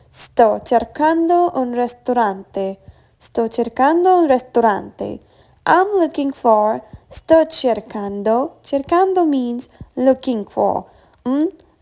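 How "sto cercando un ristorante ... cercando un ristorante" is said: plain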